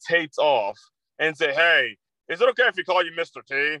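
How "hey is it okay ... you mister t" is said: snide, mocking, cheeky smart-ass tone. Retelling a student cutting off the substitute teacher, imitating TJ's smart-ass voice. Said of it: "In a real smart-ass voice".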